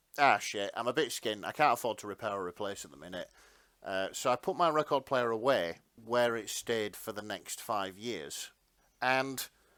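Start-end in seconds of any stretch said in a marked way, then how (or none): none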